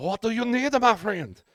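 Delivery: very high-pitched, loud put-on French accent. Retelling how Terry answered the speaker's plea for help; Terry's French accent. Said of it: "He talked in a French accent all Friday".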